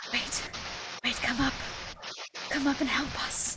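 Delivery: soft whispering. A game narrator voices something the player hears in the back of their mind, quietly. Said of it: "you hear a voice that's just gonna like quietly go like".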